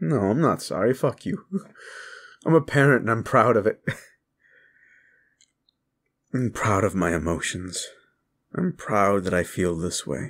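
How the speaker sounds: tearful, blubbering, crying while talking. A parent speaking to their audience, a blubbering mess. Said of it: "I'm a blubbering mess right now".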